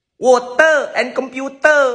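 put-on high, loud, slow Singlish accent. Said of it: "in Singlish, we say it".

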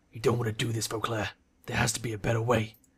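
low, threatening, ominous, menacing tone. One character confronts another over what he means to do, low and menacing. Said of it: "Edgar's voice is low and menacing".

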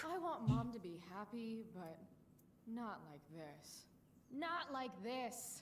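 theatrical, big dramatic delivery, swooping pitch. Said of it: "That was a line read".

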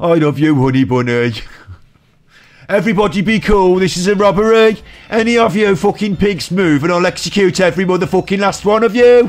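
put-on West Midlands accent. Speaker redoes the quoted lines after correcting the accent, in a West Midlands accent. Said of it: "I'm supposed to be West Midlands".

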